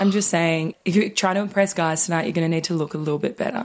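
plain

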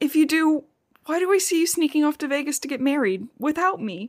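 acted, thoroughly distraught, accusing voice. Retelling a story where Alice confronts Bella: imitating Alice distraught. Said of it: "She's fucking distraught".

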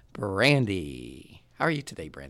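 grand, drawn-out announcer-style call. Introducing a guest with a long list of titles, in an announcer voice. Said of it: "That was my announcer voice".

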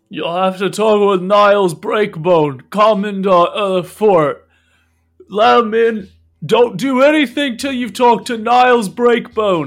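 very loud, high shouting. Coughing guard in a story shouting orders down about a visitor, shouting down. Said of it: "he shouts down".

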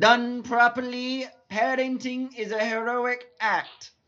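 very high, slow, drawn-out, loud character voice. Doing an impression for the others on request: Edna Mode impression. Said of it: "my Edna Mode impression".

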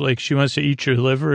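ordinary delivery

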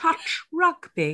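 put-on very posh upper-class accent. Teasing someone about how they said touch rugby: really posh accent. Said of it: "You went, touch rugby. You said it really posh".

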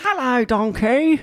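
very high, sketch-comedy style comic voice. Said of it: "they sound very, like, Little Britain voices".

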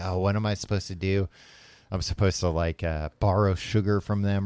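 normal talking voice

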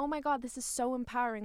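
ordinary delivery

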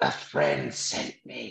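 hushed theatrical stage whisper meant to carry. A player's character leans in between the two rich twins, stage whisper. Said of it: "Wink with a stage whisper".

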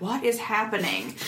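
usual speaking voice

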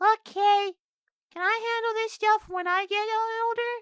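tiny, squeaky, very high, slow goblin voice. Voicing a little goblin who greets a returning adventurer: little goblin voice. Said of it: "little goblin mans walks up and goes".

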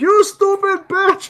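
mock, very high, furious, angry screeching yell. Riffing on a movie, voicing birds at a woman: mock yelling as the birds. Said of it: "The birds are yelling at her like".

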